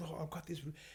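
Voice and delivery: very quiet, scared, barely audible half-whisper. Retelling a video from a traumatized woman showing her new room: imitating a half-whisper. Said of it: "And she's whispering".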